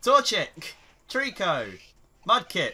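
loud shouting. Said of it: "Why are you shouting at Trico?".

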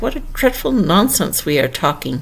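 ordinary delivery

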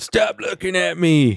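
put-on crotchety old man. Picturing someone hobbling around in old age, always mad: mock-mad old man. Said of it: "always mad".

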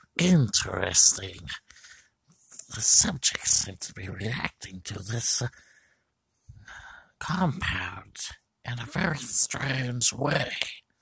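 put-on voice of a creature from another planet. Trying out different character voices, the speaker does an alien voice. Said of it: "I don't know if I got down the alien voice".

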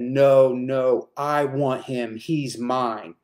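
very slow, horrifying, demonic voice. Retelling a spirit speaking through a two-year-old boy: imitating a horrific demonic voice. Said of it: "in the most, uh, horrific voice".

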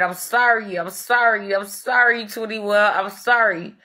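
put-on crying, tearful voice. Retelling how someone came into the room apologizing: imitating someone crying while apologizing. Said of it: "come in the room crying and said".

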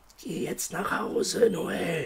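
slow, breathy murmur, barely above a whisper. Narrating a story, a voice inside a character's head speaks to him: murmured. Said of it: "raunte die Stimme".

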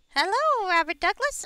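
put-on pixie voice, high and loud. Greeting someone while speaking in a pixie voice. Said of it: "I am speaking in a pixie voice at the moment".

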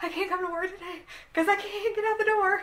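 acted-out tearful sobbing speech, very high voice. Retelling phoning their boss in a panic, the speaker imitates their own sobbing. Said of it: "just sobbing".

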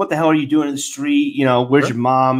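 ordinary talk

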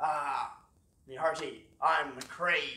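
put-on pirate voice. Playing mcrae, introducing himself in court: pirate voice. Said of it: "why are you dressed like a pirate?".

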